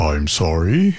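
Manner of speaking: rumbling tone. Retelling how an old friend who owed money answered: rumbling voice. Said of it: "I hear this voice rumbling".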